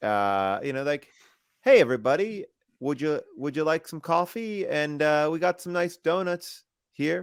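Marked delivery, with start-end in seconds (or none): 1.6-7.2 put-on Canadian accent, much higher and faster. Asked in a game to do a country's accent, in a canadian accent. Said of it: "you try to do their accent".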